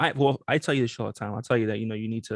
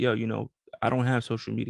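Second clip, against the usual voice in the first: normal talking voice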